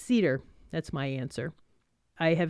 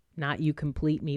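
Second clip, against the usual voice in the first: normal talking voice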